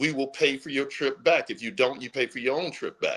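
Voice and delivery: ordinary talk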